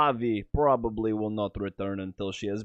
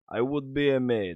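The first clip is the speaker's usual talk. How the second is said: put-on Russian-accented secret agent voice; 3 semitones higher than usual. Reading a maid's lines in a put-on voice: russian spy voice. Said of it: "why do you sound like a Russian spy".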